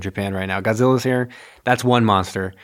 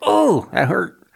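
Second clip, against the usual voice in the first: small, timid, frightened voice, pitched up; 8 semitones higher than usual. Retelling the movie fight, voicing King Kong after being burned: pretending to be scared King Kong. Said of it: "a little scared".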